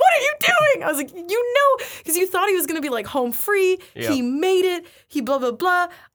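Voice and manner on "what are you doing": shrill, very high, loud, disbelieving scream. Recalling watching a film character stop running, retelling a scream. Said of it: "I literally screamed".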